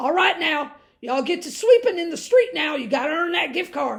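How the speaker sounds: put-on hillbilly character voice. Unlocking her door, the speaker jokes to her neighbors in a Cletus and Jethro voice. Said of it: "I said it in that voice like I did yesterday, the Cletus and Jethro voice".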